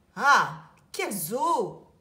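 booming, very loud, scornful and contemptuous outburst. Narrating a story, the king exclaims to his guests: exclaiming with contempt. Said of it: "S'exclame le roi avec mépris".

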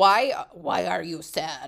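low, slow put-on German accent. Retelling what Marco said when the speaker was sad, in Marco's German accent. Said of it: "In his German accent".

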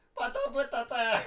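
speaking through laughter. Talking to grandpa, who wants to go on a date, laughing. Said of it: "iartă-mă, bă, iartă-mă. Am promis să nu râd".

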